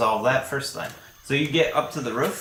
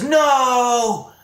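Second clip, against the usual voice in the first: very high, drawn-out, top-of-the-lungs shout; 12 semitones higher, 6 dB louder than usual. Narrating a scene to players, voicing a character shouting at the top of his lungs. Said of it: "he's shouting at the top of his lungs".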